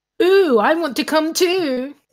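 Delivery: very sarcastic high, drawn-out shout. Describing how someone shouts after them as they leave, retelling a sarcastic shout. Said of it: "in a really sarcastic voice".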